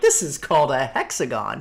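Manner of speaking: mock super sarcastic tone. Mocking own earlier line about code shapes: mock super sarcastic tone. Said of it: "it sounded like I was being super sarcastic there. I'm like".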